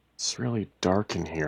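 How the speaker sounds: usual speaking voice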